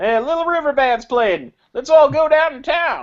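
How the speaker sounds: high put-on southern accent, cowboy robot voice. Arguing back that a robot could talk this way, in a southern robot accent. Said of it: "no robot should have a southern accent".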